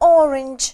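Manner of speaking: stress on first syllable of orange. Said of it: "Ударение тоже падает на первый слог".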